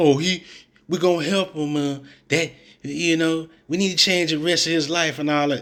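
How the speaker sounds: mocking, sarcastic, sweet soft voice. Mocking another speaker's answer about a player: mocking sweet-voiced imitation. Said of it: "you sound like an old sweet ass".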